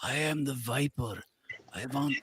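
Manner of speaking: soft, scratchy voice. Retelling a caller from an old show, in the Viper's scratchy voice. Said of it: "call up with a scratchy voice and say".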